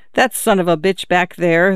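plain reading voice

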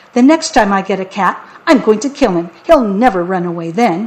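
plain

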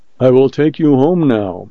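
plain

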